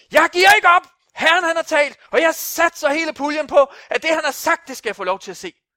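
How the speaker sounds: shouted, high-pitched voice.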